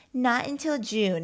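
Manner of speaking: gleefully happy delivery. Retelling what the lady at the dentist said on the phone: imitating a happy voice. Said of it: "she was like so happy to say it".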